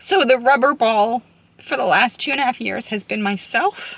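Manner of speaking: getting emotional, voice rising. A parent speaking about the past two and a half years, getting emotional. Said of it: "I didn't mean to get emotional".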